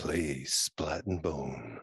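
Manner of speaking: put-on sultry voice, very low and very slow. Asked to say the new tagline in a sexy voice, sexy voice. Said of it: "Say it in your sexy voice".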